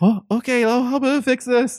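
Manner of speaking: flustered and panicky. Voicing a young girl in a potion shop as her mixture bubbles over: panicky. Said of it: "she starts kinda being kinda panicky".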